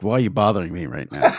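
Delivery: low, irritated, annoyed, put-out brush-off tone. Retelling how Pereira answered about a missed flag: imitating annoyed Pereira. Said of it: "But he said it like".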